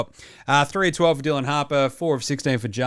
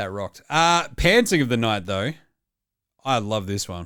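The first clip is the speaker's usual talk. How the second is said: usual speaking voice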